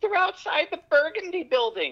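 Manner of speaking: very high, shrill, loud scream. Retelling a private-schooled kid trying to call movement; retelling a scream. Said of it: "and he was screaming".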